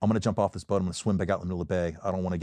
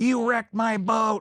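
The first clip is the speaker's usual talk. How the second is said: put-on old man yelling, very high-pitched and slow; 4 dB louder than usual. Retelling what an old man on the radio yelled: imitating an old man yelling. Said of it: "yelling at the radio guy".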